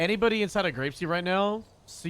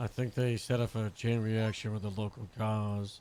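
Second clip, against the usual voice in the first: very deep, very low put-on character voice; 7 semitones lower, 3 dB quieter than usual. Repeating another speaker's line back: imitating the Jennifer voice. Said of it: "that's the Jennifer voice".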